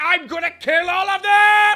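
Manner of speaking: very slow, very loud, high-pitched unhinged yell. Mocking how over the top Sisko got by season seven: imitating Sisko unhinged shout. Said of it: "I wanted him more unhinged".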